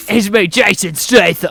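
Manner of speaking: slow, heavy stress on every single word. Repeating the other speaker's impression of the actor: Jason Statham voice. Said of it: "That's how he sounds".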